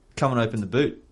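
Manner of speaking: normal talking voice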